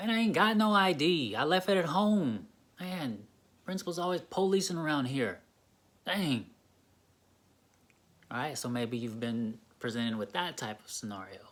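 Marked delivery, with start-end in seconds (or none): 0.0-6.5 loud, irritated, aggressive, combative comeback. Role-playing a student asked for a hallway id, aggressive reply. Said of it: "in each scenario I responded aggressively".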